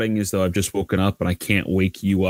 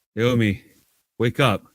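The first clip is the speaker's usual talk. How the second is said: put-on groggy, slurred speech, pitched much higher; 3 semitones higher than usual. Retelling how they woke someone by pushing her, imitating a slurred, groggy voice. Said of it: "in sort of like a slurred, groggy voice".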